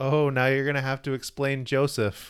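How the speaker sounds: ordinary delivery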